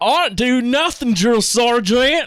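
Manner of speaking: put-on, thick, heavy Southern drawl, pitched high. Retelling what a training buddy told the drill sergeant: imitating a deep southern drawl. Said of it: "he had the deepest Southern drawl".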